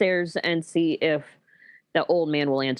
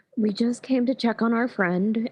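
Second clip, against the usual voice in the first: soft, quiet, hushed whisper, higher pitch; 6 semitones higher than usual. Playing Mara in a tabletop game, checking on a friend: quiet whisper. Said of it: "Mara's saying this in a like quiet whisper".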